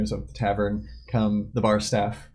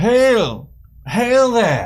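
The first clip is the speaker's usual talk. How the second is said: very high, very loud, swooping call; 13 semitones higher, 9 dB louder than usual. A game master voices a man in the bar hailing the players, calling out. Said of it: "a voice calling out".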